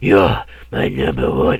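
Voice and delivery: loud, slow, drawn-out edgy villain voice. Mocking a movie Freddy line right after it plays: imitating Freddy's edgelord voice. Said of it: "this edgelord voice he's doing".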